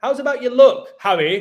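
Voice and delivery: loud, high-pitched shouting.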